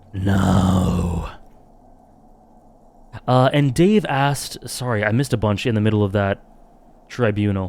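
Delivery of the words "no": put-on creaky, drawn-out reptilian voice. Having to turn something down, saying no in a reptilian brain voice. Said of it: "I have to say no in a reptilian brain voice".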